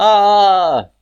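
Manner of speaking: high, loud frightened cry. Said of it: "or fear".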